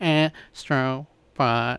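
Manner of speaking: small cute robot voice. Naming a game to another speaker, said in a little robot voice. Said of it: "Why are you saying it like that?".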